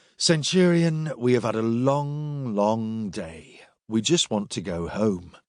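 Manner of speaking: plain reading voice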